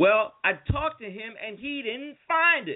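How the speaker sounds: mock put-out clerk voice, pitched very high, irritated. Retelling a store visit, voicing the woman who got annoyed, imitating an irritated woman. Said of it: "she was getting pissed off at me".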